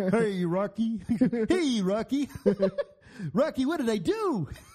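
slow cartoon moose voice. Trading Rocky and Bullwinkle lines, answering Rocky in a Bullwinkle voice. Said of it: "I can do them all".

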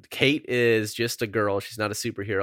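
plain

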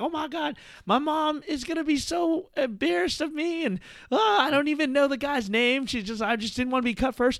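very high-pitched sobbing, tearful wail. Retelling a cut contestant walking out, imitating someone crying. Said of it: "she's all crying".

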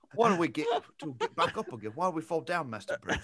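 swooping, sing-song film-star voice with wide pitch swings. Doing a better second try at the film voice: Michael Caine voice. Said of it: "Michael Caine".

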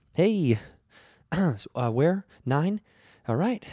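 high-pitched, uneasy, uncomfortable, nervous voice. Describing an uncomfortable elevator attendant asking for a floor: imitating a nervous man. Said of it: "He looked so nervous".

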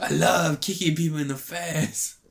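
put-on Brussels accent that drifts toward Spanish. Mocking Jean-Claude Van Damme: mock Van Damme voice sounding Spanish. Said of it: "That sounds more like a Spanish person".

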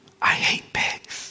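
soft, breathy, leaned-in whisper. Retelling how a guy leaned in closer and whispered his answer, retelling a whisper. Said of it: "he leans in a little bit closer and he whispers".

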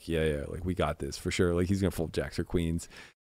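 soft, hushed half-whispered aside. Retelling half-whispering to a companion during a poker hand: retelling a half-whisper. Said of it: "whispering to, to my, uh, to my guy".

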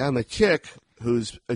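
ordinary talk

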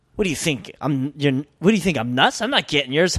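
irritated, fuming, rude tone. Retelling what a rude acquaintance said about paying for drinks: imitating a rude guy. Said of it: "he goes like this".

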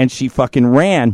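ordinary talk, nothing marked

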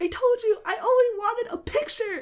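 put-on, shrill, very high screaming outburst. Retelling a TV scene where Troy loses it: imitating Troy screaming. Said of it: "screaming because he was like".

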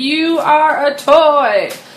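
slow, cheesy delivery.

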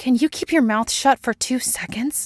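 curt, cutting, sharp snap, pitched high. Scully snaps at Mulder in front of Peggy Sue. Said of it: "Scully snaps".

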